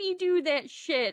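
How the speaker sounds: put-on high-pitched, outraged young child voice.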